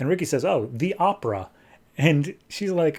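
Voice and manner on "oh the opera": ordinary talk, nothing marked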